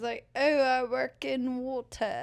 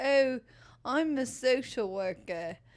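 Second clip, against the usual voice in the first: put-on English lady's British accent. Retelling crowd work where a lady answered in a British accent: imitating a British accent. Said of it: "this lady in, like, a British accent".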